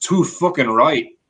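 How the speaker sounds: put-on very loud, high-pitched, thick Scottish accent. Retelling an actor's answer after a stunt: imitating a thick scottish brogue. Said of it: "in his incredibly thick Scottish brogue".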